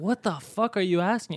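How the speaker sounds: exaggerated put-on heavy Russian accent. Retelling a guy's argument with a protester: imitating a huge Russian accent. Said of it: "he has a huge accent".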